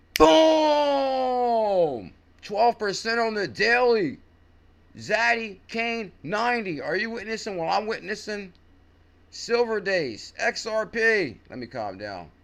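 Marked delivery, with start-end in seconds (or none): 0.2-11.4 overexcited, hyped-up, very high, very slow raised voice. Reacting to coins pumping on the daily: way too much energy. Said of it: "way too much energy right now".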